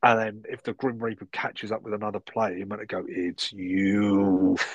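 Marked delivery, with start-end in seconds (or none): 3.1-4.6 spooky, spine-chilling, creepy, eerie voice. Explaining a board game, a player announces the Grim Reaper's catch in a creepy voice. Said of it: "in a creepy voice".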